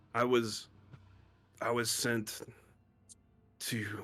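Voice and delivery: dazed, sluggish, lethargic, halting, out of it. Voicing a character found in a locked cell, lethargic and out of it. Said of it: "He's like lethargic".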